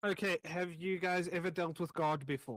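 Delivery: weary, worn-out sighing delivery. Voicing a character addressing the group of players, sighing. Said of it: "She sighs and she says".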